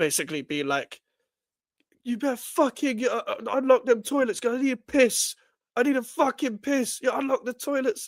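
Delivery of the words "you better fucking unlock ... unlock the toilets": mock demanding, high, raised shouting. Retelling a guy who stormed into McDonald's: imitating someone shouting at staff. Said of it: "shouting at the staff".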